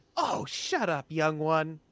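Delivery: slow, drawn-out, projected calling-out in character voice. Voicing a character who shouts toward the back: in-character shout. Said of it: "I shout towards the back".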